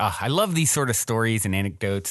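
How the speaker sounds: ordinary delivery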